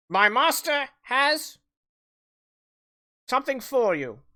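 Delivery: high, quasi-feminine squawking bird voice. The narrator voices a crow creature delivering a message, in a squawking quasi-feminine voice. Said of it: "in a kind of quasi feminine kind of squawking voice".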